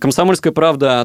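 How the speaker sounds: ordinary delivery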